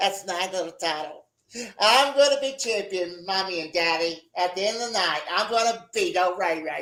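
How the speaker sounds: put-on babyish, boastful little toddler voice. Mocking an opponent's championship fantasies, imitating him as a little toddler. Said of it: "They're so like a little toddler".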